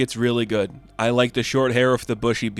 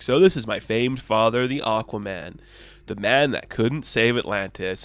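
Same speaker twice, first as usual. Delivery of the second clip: plain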